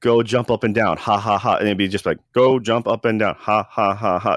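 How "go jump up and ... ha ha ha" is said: robotic, machine-like text-to-speech voice. Describing the old Windows type-to-talk function: old Windows text-to-speech voice. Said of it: "like that really robotic voice".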